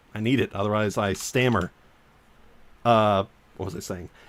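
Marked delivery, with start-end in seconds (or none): none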